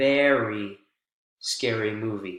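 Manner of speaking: very stressed, weight on its vowel. Teaching focus words in a reply, with stress on very. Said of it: "Very is new information here. And that's why we're stressing the, the vowel sound".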